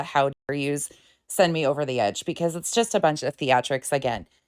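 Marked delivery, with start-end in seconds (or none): none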